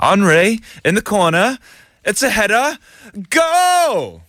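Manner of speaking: very high, bad put-on English accent. After being taught by someone with a natural accent, a really poor english accent. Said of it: "I have a really poor uh, English accent".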